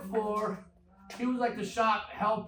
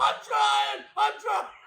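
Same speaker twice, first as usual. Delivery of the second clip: rough, pitched-up, angry voice; 13 semitones higher, 7 dB louder than usual. Telling how a guy named Donnie bumped it, imitating angry Donnie. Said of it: "he was pissed".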